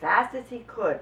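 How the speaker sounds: ordinary delivery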